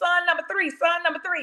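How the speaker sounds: very high-pitched, screamed call. Retelling what was screamed with the phone on mute: imitating own screaming. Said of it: "'cause I'm screaming".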